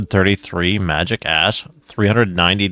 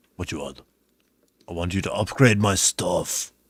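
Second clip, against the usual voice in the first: flat, even delivery in an Austrian accent; 2 semitones lower, 8 dB quieter than usual. Repeating a game character's question back: Arnold voice. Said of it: "That was, like, an Arnold voice".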